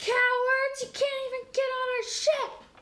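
very high, drawn-out character yell. Voicing a character taunting enemies who can't board the ship: yelling in character. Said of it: "Bronwyn yells".

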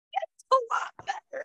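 English accent, British. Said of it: "That wasn't good".

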